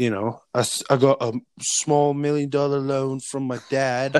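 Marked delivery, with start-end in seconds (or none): 0.9-4.2 put-on billionaire tycoon voice, drifting into English accent. Joking about celebrities handed their wealth: Trump impression. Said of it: "I like how you turned from Trump".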